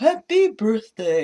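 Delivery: loud, belted-out cartoon character voice. Imitating the snowman's line when he comes to life: imitating Frosty's catchphrase. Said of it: "which I found annoying that he did every time".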